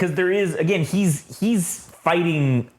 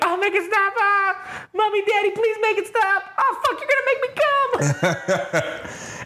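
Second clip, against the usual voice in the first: very high pitched mock scream. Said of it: "she starts screaming like".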